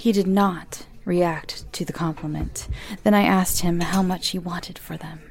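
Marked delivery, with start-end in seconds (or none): none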